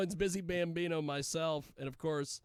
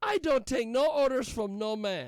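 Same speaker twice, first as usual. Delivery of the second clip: put-on Argentinian accent, much higher; 7 semitones higher, 7 dB louder than usual. Retelling a scheduling talk, quoting a woman refusing orders, imitating argentinian accent. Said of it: "there was an Argentinian uh".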